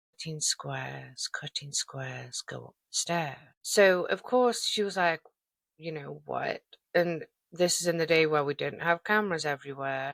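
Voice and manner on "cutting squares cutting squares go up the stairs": put-on creepy, ominous voice, lower and quieter. Telling a story, quoting the caller on the other end of the phone, imitating an ominous phone voice. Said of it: "ominous voice on the other end saying".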